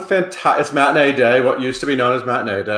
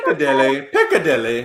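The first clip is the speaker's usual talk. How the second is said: bad put-on British accent. Repeating a London theater's name to a co-host, in a bad put-on British accent. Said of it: "I'm just adding a bad accent".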